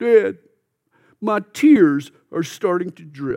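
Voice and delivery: put-on tearful little-boy whimper. A father retells his young son's answer, imitating a child whimpering. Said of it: "Nick whimpered".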